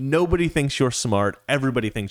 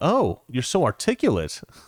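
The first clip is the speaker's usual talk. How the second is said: put-on taken-aback, surprised voice. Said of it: "surprised tone".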